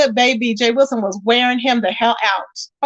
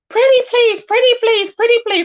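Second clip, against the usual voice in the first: put-on very high, whiny, pleading child voice; 11 semitones higher, 3 dB louder than usual. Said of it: "Are you okay?".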